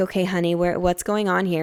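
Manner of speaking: usual speaking voice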